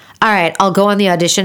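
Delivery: ordinary delivery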